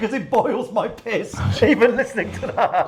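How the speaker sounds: speech broken up by laughter. Reacting to a story about an agent, laughing while talking. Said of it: "I don't even know why I'm laughing".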